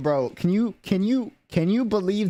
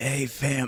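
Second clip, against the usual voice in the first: put-on, exaggerated bad sick voice, lower pitch; 3 semitones lower, 4 dB quieter than usual. Greeting viewers while playing up being sick: fake bad sick voice. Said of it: "faking a bad voice".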